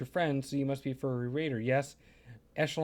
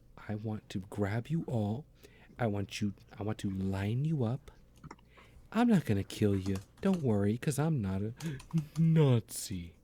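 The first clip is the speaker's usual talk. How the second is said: speaking softly in anger; 4 semitones lower than usual. Ranting into the microphone at a listener and everyone who agrees with them: speaking softly in anger. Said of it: "I am speaking very softly into my microphone".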